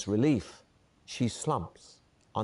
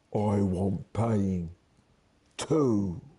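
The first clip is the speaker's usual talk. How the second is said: husky, rough voice; 4 dB louder than usual. Narrator reading a woman grabbing the listener by the throat, in a husky voice. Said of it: "says in a husky voice".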